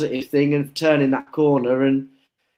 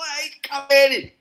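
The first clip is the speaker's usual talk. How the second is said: mock screaming, high-pitched. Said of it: "as soon as I was screaming".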